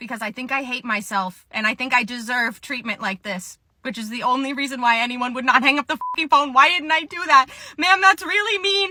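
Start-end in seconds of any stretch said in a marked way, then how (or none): 7.8-8.9 put-on very high tearful sobbing voice. Retelling a phone call with a woman who was mean: retelling crying on the phone. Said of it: "Now I'm crying on the phone".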